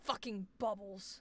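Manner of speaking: properly angry, fed-up swearing outburst. Answering a request to say bubbles angrily, showing an angry line: angry line. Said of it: "a lot of things can be angry".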